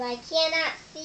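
ordinary delivery

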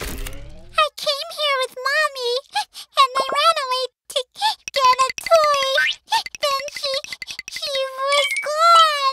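high, tearful, sobbing voice stumbling over words. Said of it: "Why are you crying".

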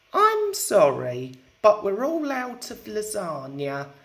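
ordinary delivery

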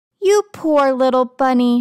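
usual speaking voice

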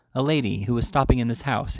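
ordinary delivery

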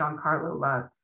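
ordinary delivery

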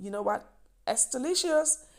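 high, loud, delighted, with a laugh. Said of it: "I said to myself".

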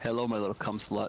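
plain

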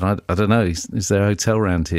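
plain

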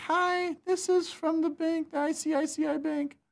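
very high, slow fake female voice. Acting out Sunny's OTP call from the bank, in his fake female caller voice. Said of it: "he pretends to be a female".

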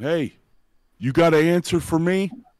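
loud, high-pitched shout. Playing a wrestler at the ropes yelling at a rival: yelling at a rival. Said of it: "yell at him".

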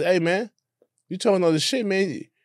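put-on high child's voice.

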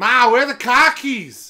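Boston accent, hollered very loud and high. Showing the other speaker how to do Boston, in a Boston accent. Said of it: "All you have to do for Boston is say".

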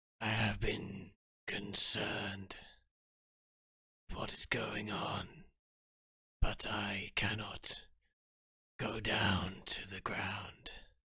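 whispered voice of an ancient creature.

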